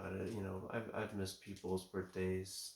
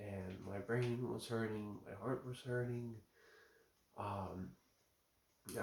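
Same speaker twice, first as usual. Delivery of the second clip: voice catching with emotion; 2 semitones higher than usual. Describing a terrifying experience that still hurts, choking up. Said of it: "I'm sorry if I sound like I'm choking up a little bit".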